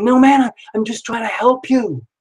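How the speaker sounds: defensive tone with the pitch pushed up. Retelling a man's reply to being told to stop: imitating someone speaking defensively.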